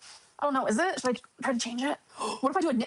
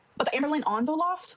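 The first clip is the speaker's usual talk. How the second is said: normal talking voice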